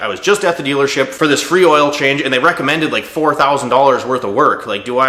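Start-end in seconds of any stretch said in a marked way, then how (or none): none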